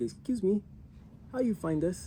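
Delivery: put-on German accent, voice pitched way up. Retelling what the guy asked them before they left, in a German accent. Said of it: "the German accent".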